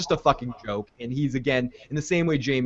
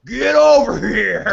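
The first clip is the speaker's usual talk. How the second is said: rough, very loud, high-pitched yell; 9 semitones higher, 9 dB louder than usual. Reading out a listener's joke about Drogo, in the Mortal Kombat voice. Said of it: "in the Mortal Kombat voice".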